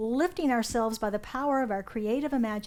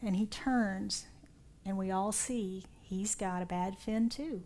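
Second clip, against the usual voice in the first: ordinary delivery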